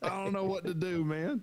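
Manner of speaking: mock sobbing. Acting out a future complaint call about losing the channels: mock crying. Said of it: "I'm gonna cry about it".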